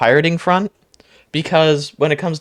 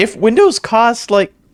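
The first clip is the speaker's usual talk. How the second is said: voice breaking and cracking mid-phrase; 6 semitones higher, 4 dB louder than usual. Speaker in the middle of a sentence, voice cracking. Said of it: "excuse my voice crack".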